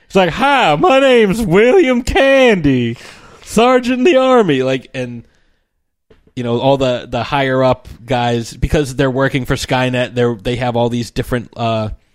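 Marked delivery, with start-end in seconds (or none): 0.3-4.6 silly slow Southern drawl, pitched very high. Retelling a deleted film scene, imitating Arnold Schwarzenegger's ridiculous Southern accent. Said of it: "this ridiculous Southern accent".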